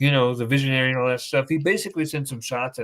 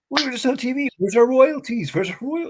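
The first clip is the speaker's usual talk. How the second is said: very high, frantic, excited outburst; 11 semitones higher than usual. Retelling how others reacted on seeing themselves on TV: imitating someone freaking out. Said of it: "they started freaking out again".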